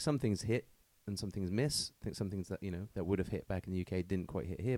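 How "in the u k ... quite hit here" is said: normal talking voice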